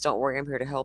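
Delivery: quick, hushed, menacing, sinister voice. Retelling what somebody said near a crying girl: retelling in a sinister voice. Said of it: "somebody saying in a sinister voice".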